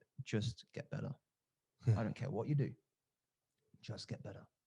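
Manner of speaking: put-on deep voice. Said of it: "very deep voice".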